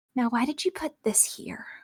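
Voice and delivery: soft muttered aside under the breath. The narrator voices a suited woman questioning the listener, muttering under her breath. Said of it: "she mutters under her breath".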